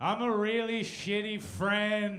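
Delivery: mock drunk, very loud, slow, drawn-out delivery. Retelling an answer to a cop shining a flashlight: imitating drunk speech. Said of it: "And I just drunkenly go".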